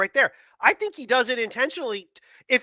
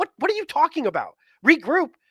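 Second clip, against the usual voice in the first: plain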